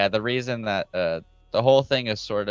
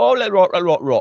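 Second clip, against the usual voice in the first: mock British accent, higher and louder; 11 semitones higher, 9 dB louder than usual. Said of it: "they'll all talk like this".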